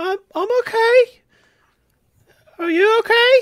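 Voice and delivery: tiny, very high, squeaky little voice. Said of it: "tiny voice".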